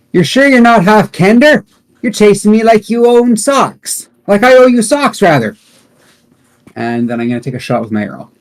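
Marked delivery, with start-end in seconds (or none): 0.1-5.5 very high, loud, shouted yelling. A player in a tabletop game taunts an enemy again: yelling a taunt. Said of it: "and I yell".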